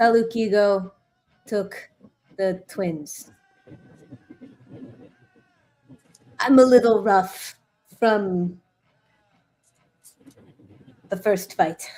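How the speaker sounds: hushed, low mutter under the breath. A player's character speaks into a sending stone on the walk over, muttered under breath. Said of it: "just mutter under my breath".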